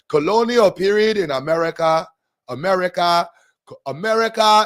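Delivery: attempted Nigerian accent, practice try. Practicing accents for readings, retrying a line in an attempted nigerian accent. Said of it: "I gotta hang around some Nigerians".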